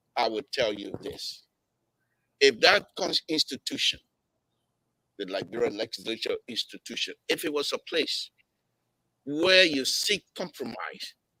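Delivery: very peaceful, calm, composed tone. After asking to be allowed to speak, answering another speaker in a peaceful tone. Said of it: "in a very peaceful tone".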